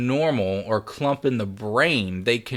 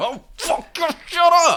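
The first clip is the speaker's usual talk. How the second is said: crazed, combative deer voice, higher and louder; 5 dB louder than usual. Imagining a crazy deer jumping out at a driver: crazy deer ready to fight. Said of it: "he's got the fucking crazy eye going".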